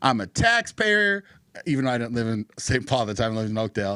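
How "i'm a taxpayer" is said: put-on heated, angry rant, pitched up. Retelling telling off a cop who refused to help: retelling an angry rant. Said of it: "And I was so mad".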